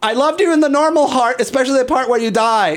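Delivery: very high, starstruck, blurted shriek. Retelling spotting the guy from Glee and what the speaker screamed at him. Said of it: "And I just screamed".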